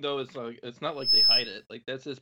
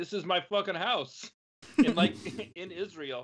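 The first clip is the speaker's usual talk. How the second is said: put-on Brooklyn accent with raised pitch; 6 semitones higher than usual. Describing a video of a man claiming a house, imitating a Brooklyn accent. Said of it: "redheaded dude with like a Brooklyn accent being like".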